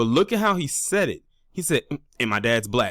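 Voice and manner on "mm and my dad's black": put-on standoffish, aloof tone. Replaying how a speaker mentioned his father: imitating a standoffish tone. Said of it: "He said it in a very standoffish tone".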